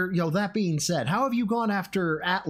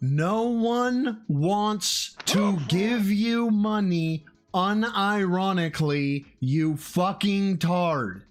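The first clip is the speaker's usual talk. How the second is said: very slow, deliberate, spelled-out, cutting tone. Speaker addresses Phil directly, saying it real slow. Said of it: "I said it real slow for you this time".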